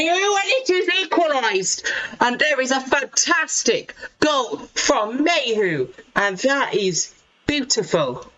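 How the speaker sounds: thrilled, high-pitched, excited goal-call style shouting. Commentator calling an equalising goal in a live match; shouting. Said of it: "I'm shouting. I'm sorry for shouting".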